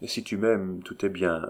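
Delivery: plain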